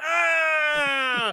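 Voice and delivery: high, shouted cry of pain. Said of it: "and he's like".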